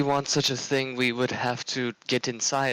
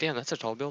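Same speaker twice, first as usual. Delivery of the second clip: soft mutter under the breath; 5 dB quieter than usual. Speaking in character, looking up at the building: muttered under his breath. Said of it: "under his breath".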